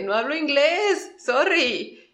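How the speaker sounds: mock frightened, high, flustered, rattled panic. Retelling how a nervous local answers a foreigner: imitating a panicked local. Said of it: "se asusta y se friquea y te dice".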